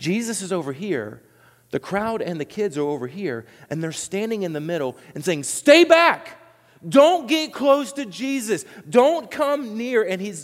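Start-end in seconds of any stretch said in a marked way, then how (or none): 5.4-10.0 play-acted, very high, slow, raised shout. Acting out disciples holding back parents and children: imitating disciples yelling. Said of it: "they're yelling at them".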